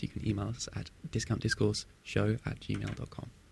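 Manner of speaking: soft whisper. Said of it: "Why did you whisper that?".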